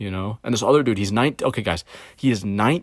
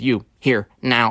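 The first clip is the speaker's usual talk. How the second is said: mimicked, very nasal put-on voice. Retelling what she said on coming downstairs, imitating Megan Griffin's nasal voice. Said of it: "the most nasally voice in the world".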